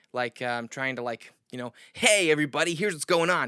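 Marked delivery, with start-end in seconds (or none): 1.9-3.5 pitchy, loud, excited put-on announcer voice. Showing the pitchy way of talking about all this: put-on announcer voice. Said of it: "announcer voice going".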